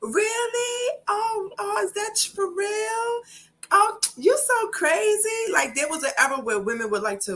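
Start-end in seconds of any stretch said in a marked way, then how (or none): 0.0-5.5 very slow, very high, drawn-out ditzy voice. Describing an era when women acted dumb to seem cute: imitating women playing dumb. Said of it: "most women like to play dumb".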